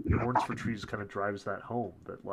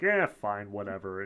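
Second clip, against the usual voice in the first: put-on cynical character voice, louder; 4 dB louder than usual. Retelling a game character brushing off the player: cynical Mort voice. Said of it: "the cynical".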